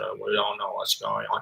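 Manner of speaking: very quiet, low, unclear mumbling. Showing how not to speak to an interpreter: mumbling. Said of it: "Don't just mumble like this".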